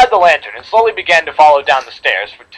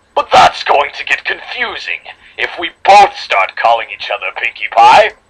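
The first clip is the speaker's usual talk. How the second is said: sinister, devilish, demonic voice; 3 semitones lower than usual. Reading a story aloud, voicing the character's copy in a more demonic tone. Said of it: "I'm going to read her in a more demonic tone".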